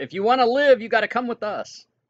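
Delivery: loud high-pitched yelling. A player's character calls out to a group of about thirty people: yelling out. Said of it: "I'll yell out".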